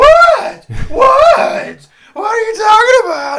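very high, very loud, shrill, drawn-out escalating yell. Retelling a woman at a show after the host shushed her, imitating her getting louder. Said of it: "Just got louder".

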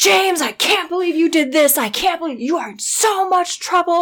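full-on, very high, shrill angry yelling. Retelling the speaker's dad yelling at Joel while calling him James; imitating dad yelling. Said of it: "my dad is just yelling at Joel".

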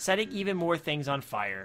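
ordinary delivery

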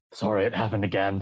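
re-enacted whisper. Recalling walking out and speaking to a companion, retelling a whisper. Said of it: "I just sort of whispered".

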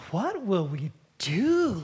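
put-on, mildly sneering, snide tone. Reading out a frequently asked question: imitating a snide question. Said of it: "say it with a little snide way".

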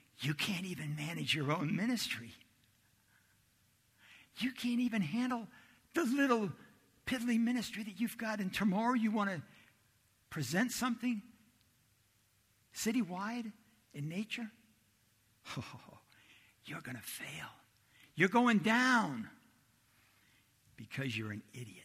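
play-acted, high-pitched, sneering, hissing taunt. Speaker recounts a voice felt before the luncheon: imitating a hissing, sneering voice. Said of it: "a voice was hissing, sneering at me".

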